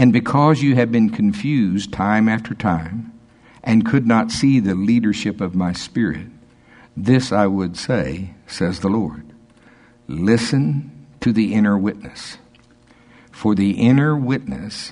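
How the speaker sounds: slow, deliberate reading.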